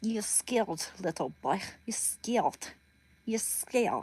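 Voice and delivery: put-on Russian-accented English. Speaker practicing a taunting line, in a put-on Russian accent. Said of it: "I'll get that Russian accent down".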